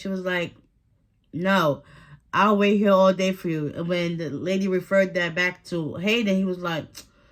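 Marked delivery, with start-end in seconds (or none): none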